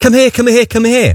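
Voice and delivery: put-on child shout. A parent retells their seven-year-old calling out, imitating a child shouting. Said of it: "she shouts out".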